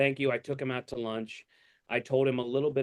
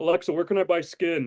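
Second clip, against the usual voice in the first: loud, high, creepy killer voice, pushed out; 5 semitones higher, 5 dB louder than usual. Retelling a comedy clip of talking to a smart speaker, Buffalo Bill voice. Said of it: "as Buffalo Bill".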